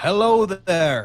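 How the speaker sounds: slow deliberate speech. Speaking in character to a big creature in primordial: talking slowly. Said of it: "I'm talking slowly".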